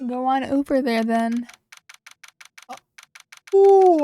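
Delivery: talking through a yawn. Showing viewers the lot where it all happened, yawning while talking. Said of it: "I don't know why I'm yawning so much".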